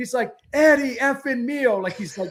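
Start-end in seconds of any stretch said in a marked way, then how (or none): 0.5-1.8 imitated yelling, higher pitch. Retelling a scout yelling a goalie's name: imitating a scout yelling.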